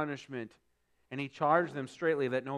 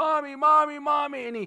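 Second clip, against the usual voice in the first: mock child crying, much higher, louder, slower; 13 semitones higher, 8 dB louder than usual. Retelling a cartoon boy with a scraped knee running through the house, imitating a child crying. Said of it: "running through the house crying".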